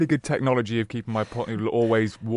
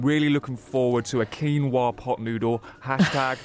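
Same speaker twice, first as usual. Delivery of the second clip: ordinary talk, nothing marked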